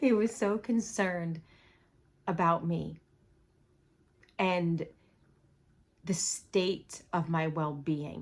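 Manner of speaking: trying not to cry, holding back tears. Recalling how concerned he was about her, holding back tears. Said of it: "I'm trying not to cry".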